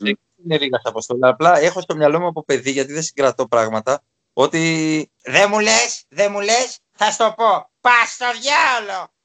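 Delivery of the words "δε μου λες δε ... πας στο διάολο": gruff put-on old-timer voice, high, slow yelled ending. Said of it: "μίμηση serial, ε, Ρίγα Αποστόλου".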